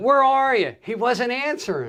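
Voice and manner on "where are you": mock, very high-pitched scream. Retelling calling down from a roof to a helper who didn't answer: retelling a scream. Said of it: "I'm screaming".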